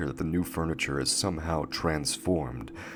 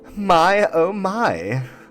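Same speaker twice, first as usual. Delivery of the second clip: very high, loud, syrupy sweet gushing voice; 12 dB louder than usual. Narrating a game show, the female host greets the contestants: syrupy sweet. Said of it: "rattles in a syrupy sweet tone".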